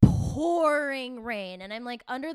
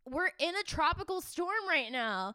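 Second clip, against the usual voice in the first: ordinary delivery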